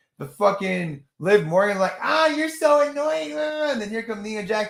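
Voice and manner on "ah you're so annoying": whiny, high-pitched complaining tone. Mocking a wrestler's promo: whiny Liv Morgan impression. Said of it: "have the whiniest".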